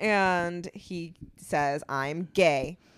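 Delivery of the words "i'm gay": put-on deadpan delivery, lower. Recapping a scene where a boy confides in a girl, imitating a deadpan delivery. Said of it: "he says it with such a straight face".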